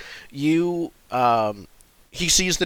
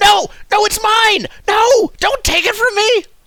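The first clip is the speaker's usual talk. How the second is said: shrill, very high, loud, drawn-out kobold yell; 9 dB louder than usual. Voicing a kobold outside who refuses to give up the blanket: kobold yelling. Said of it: "one of the kobolds yelling".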